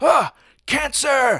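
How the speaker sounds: very high, sudden, loud shouted cry. Recapping a story where kids turn into russian dolls; retelling a shout. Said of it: "and he shouts".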